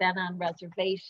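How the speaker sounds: usual speaking voice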